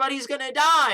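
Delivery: high, loud, desperate pleading tone.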